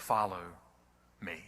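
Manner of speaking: loving but firm, commanding tone. Retelling Jesus calling a hated traitor: imitating a commanding call. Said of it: "it's a commanding type of call".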